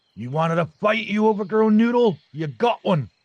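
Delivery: put-on sudden, loud, very high Scottish accent. Narrating a fight, the storyteller voices a character taunting the beast, Scottish accent. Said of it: "I just went Scottish there".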